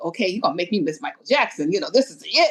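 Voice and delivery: acted-out angry, accusing, resentful protest. Retelling walking to the seats behind a stepmom: imitating own past anger. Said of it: "I'm mad at her".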